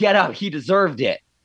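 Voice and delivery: ordinary talk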